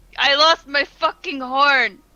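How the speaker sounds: put-on very loud, drawn-out drunken yelling shout. Playing a character distracting a guard: drunken shouting in character. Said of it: "Are you just drunkenly shouting this at them?".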